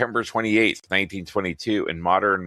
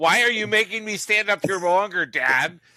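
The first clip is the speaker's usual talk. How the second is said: mock furious voice, higher; 12 semitones higher than usual. Retelling how the daughter felt during a tiebreaker on stage: imitating an angry daughter. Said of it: "she just wants to rip your throat out".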